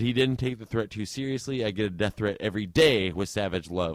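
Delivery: ordinary delivery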